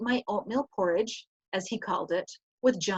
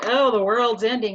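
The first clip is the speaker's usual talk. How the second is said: put-on sarcasm, louder; 7 dB louder than usual. Explaining one reading of a mourning poem: mock sarcastic tone. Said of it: "you could see it as sarcastic".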